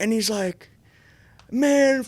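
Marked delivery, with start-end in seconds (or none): 1.5-2.1 high, loud, furious yelling and cursing. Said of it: "like, yelling and all this shit".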